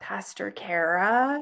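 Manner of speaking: put-on kid voice with one word stretched out. Retelling a kid coming up after the service; imitating a confessing kid. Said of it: "I have something to confess kid's voice".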